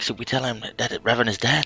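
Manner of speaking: whispered, in character voice. Whispering a question in a character's ear: whispering in character. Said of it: "I'm gonna whisper him, like".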